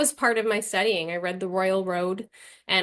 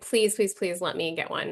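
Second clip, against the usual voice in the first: put-on begging, pleading tone. Retelling begging mom for a card reading too: imitating own begging. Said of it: "I begged her to take me".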